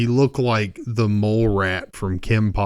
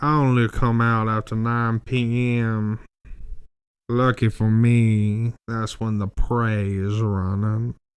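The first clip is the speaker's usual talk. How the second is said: put-on Southern lawyer accent. Retelling what a man claiming to be a vampire said, in a southern lawyer voice. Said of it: "he talked like a, a fucking Southern lawyer".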